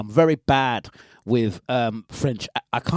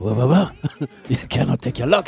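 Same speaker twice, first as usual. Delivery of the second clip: fake French-accented voice. Retelling what he was told while getting off the plane, in a French accent. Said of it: "That's my French accent".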